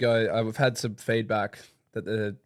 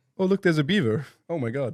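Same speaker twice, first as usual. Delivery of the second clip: put-on Canadian accent, pitched up; 6 semitones higher than usual. Speakers take turns doing canadian accents; canadian accent. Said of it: "Canadian accent".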